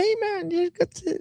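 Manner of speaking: put-on squeaky, very high-pitched New Zealand accent. Describing how some Kiwis talk, imitating them: squeaky Kiwi accent. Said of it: "they go this squeaky sort of".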